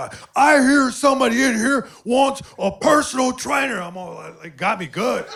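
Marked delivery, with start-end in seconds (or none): 0.3-3.8 loud, high-pitched yell. Retelling how a personal trainer came in: imitating a trainer yelling. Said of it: "he starts yelling".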